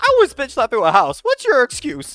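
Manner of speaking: very high, very loud voice with swinging, swooping pitch. Giving the one line remembered: TFS Krillin voice. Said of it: "the T F S Krillin".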